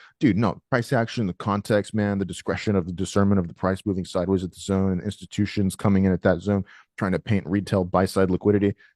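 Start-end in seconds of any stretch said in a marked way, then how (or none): none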